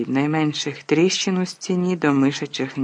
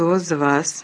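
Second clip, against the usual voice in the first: quavering, trembling voice. Professor McGonagall comes back through the hole and faces the stunned students, trembling voice. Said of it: "почала вона тремтячим голосом".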